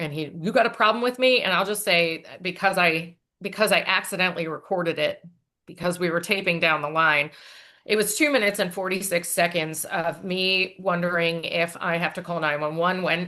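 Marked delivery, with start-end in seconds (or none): 0.4-1.4 acted big-mad confrontational tone, pitched up. Retelling Michael Bennett confronting Jim: imitating angry Michael Bennett. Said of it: "he's big mad".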